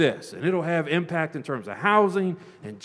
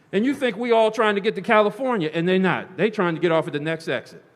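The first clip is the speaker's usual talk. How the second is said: plain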